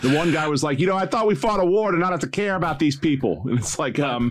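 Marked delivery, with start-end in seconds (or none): 0.8-3.4 put-on broad stock New England accent. Retelling what one guy said, in a stereotypical New England accent. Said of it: "the most stereotypical New England accents".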